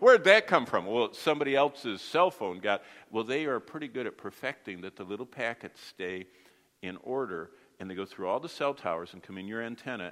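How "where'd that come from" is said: loud, high-pitched startled cry. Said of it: "And you go".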